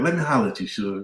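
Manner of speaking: calm, easygoing uncle voice. Describing how a man talks to people, imitating him in an Uncle Mike voice. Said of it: "He got that Uncle Mike voice".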